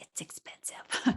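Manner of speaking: hushed voice. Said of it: "Sorry, I shouldn't whisper".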